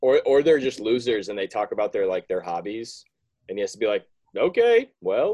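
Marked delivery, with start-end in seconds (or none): 4.4-5.3 flat game-show host voice, pitched higher. Imitating a quiz host replying to a contestant: monotone Alex Trebek voice. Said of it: "He's just pretty monotone".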